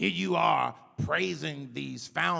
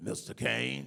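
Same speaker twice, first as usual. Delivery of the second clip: put-on, imitated raspy voice; 2 semitones lower, 4 dB quieter than usual. Recalling a caller to the radio show, doing the caller's raspy voice. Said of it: "in a very grass, raspy voice".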